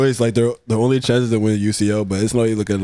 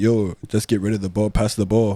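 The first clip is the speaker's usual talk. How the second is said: ordinary talk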